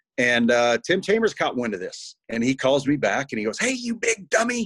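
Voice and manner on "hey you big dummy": slow, very high-pitched, drawn-out voice. Retelling a phone call from Tim Chambers: imitating Tim Chambers's voice. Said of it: "Tim and his voice".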